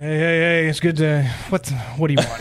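mock tired, worn-out voice. Acting out the same greeting thirty minutes before closing: imitating a worn-out cashier. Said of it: "it's like thirty minutes before closing".

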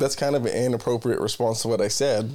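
normal talking voice

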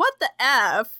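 ordinary delivery

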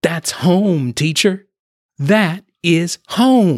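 enthusiastic eager voice. A girl called on by her teacher answers, enthusiastic. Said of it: "she said enthusiastically".

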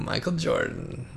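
dramatic, low, slow and reverent. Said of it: "Why are you saying it like that?".

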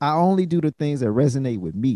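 ordinary talk, nothing marked

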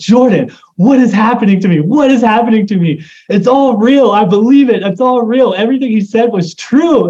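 high, shaken, tearful crying outburst. Recounting a lunch at a Panera Bread, the speaker reenacts crying out to a friend. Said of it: "I started shaking and crying".

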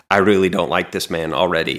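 ordinary delivery

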